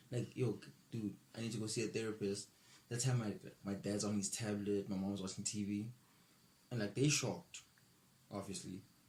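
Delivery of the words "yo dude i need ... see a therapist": plain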